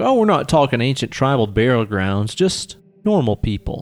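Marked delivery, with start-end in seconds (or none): none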